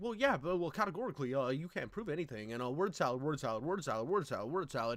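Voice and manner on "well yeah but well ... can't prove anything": hedging, halting, hesitant delivery. Retelling a debate moment, imitating Vosh. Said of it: "And Vosh is like".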